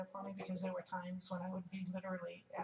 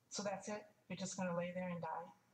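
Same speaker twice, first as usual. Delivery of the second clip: ordinary delivery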